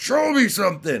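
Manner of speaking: put-on loud, high-pitched shouting. Retelling the referee yelling during a choke: imitating a yell. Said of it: "the referee is just yelling".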